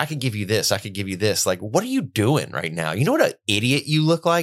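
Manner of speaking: smug, cocky, mocking, taunting tone. Retelling a film scene, the devil taunting someone praying: imitating the cocky devil. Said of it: "There's this cockiness from the devil".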